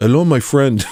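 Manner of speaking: put-on affected Indian accent. Retelling a trip to India and greeting someone: imitating own put-on Indian accent. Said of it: "immediately affected an Indian accent".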